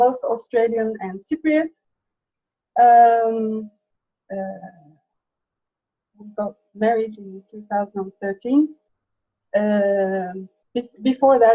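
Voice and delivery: nervous, anxious, hesitant and halting speech. Telling a host about their background and marriage: nervous, hesitant. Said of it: "sorry, I'm very nervous".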